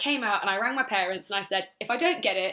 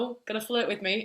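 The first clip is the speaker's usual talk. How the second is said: mock playful, joking, kidding, teasing tone. Retelling what a guy jokingly said to her, retelling a joking tease. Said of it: "he kind of like jokingly was like".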